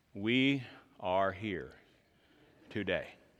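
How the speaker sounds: very low, very slow, measured, deliberate preaching voice. Explaining why he talks fast, imitating his boring church's very deliberate pastor. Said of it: "the pastor was very deliberate".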